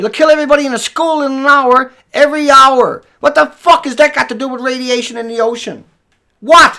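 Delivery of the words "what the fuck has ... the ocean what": furious angry yell. Speaker challenging someone's counter-argument, yelling angrily at them. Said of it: "I'm yelling at you".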